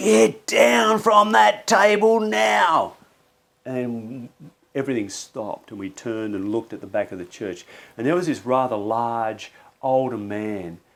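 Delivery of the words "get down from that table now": put-on, very high, very slow, loud, drawn-out booming shout. Retelling how a man at the back of the church yelled: imitating a booming, deep shout. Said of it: "this booming, loud, deep voice from the back".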